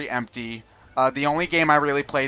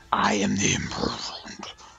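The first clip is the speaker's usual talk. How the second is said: dark, slow, drawn-out, breathy whisper; 6 semitones lower, 4 dB quieter than usual. Guessing how a game villain would talk: really dark voice for the Imprisoned. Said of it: "I have a really dark".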